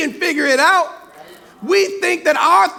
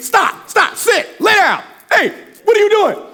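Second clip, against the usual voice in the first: urgent, firm, screaming delivery; 4 semitones higher than usual. Retelling giving a dog commands from a distance, screaming at the dog. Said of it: "I'm screaming at the dog".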